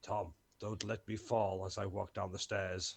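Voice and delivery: hushed, half-whispered aside, in character. Half-whispering to tom in character while walking down the stairs: half-whispering in character. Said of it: "I'm just gonna whisper".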